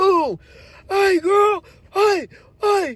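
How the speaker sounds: high-pitched, hollering voice.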